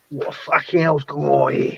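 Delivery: put-on London tough-guy voice. Imitating Budgie, who sounds like Ray Winstone: Ray Winstone voice. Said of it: "You know the way how Ray Winston talks?".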